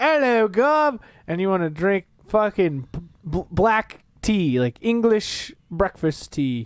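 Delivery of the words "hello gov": put-on British accent. Mocking the other speaker's wish to wear a British wig: mock British accent. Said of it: "you wanna wear a British wig and you wanna go".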